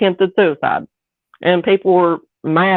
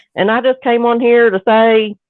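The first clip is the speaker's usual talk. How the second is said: put-on Southern US accent; 4 semitones higher than usual. Quoting a woman who belittles people, imitating a Southern accent. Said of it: "I'm imitating a Southern accent".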